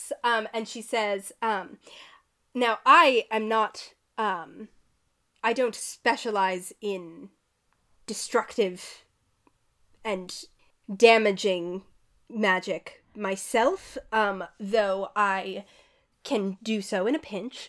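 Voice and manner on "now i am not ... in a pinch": ordinary talk, nothing marked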